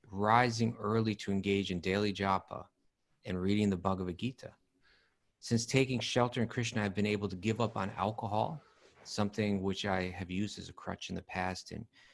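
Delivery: plain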